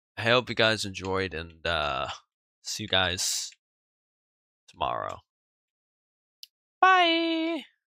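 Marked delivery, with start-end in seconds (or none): 6.8-7.6 very high squeaky voice crack, drawn-out bye. Signing off to viewers until tomorrow, voice cracking. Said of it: "Absolutely terrible voice crack".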